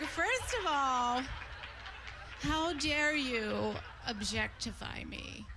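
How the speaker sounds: mock weepy, offended, crying, very slow, drawn out. Retelling a woman's reply after a man yelled at her, imitating a woman crying. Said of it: "and she starts crying".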